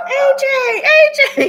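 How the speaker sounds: very high, very slow, drawn-out scream. Speaker re-enacts screaming a name into the phone, retelling a scream. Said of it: "I'm screaming".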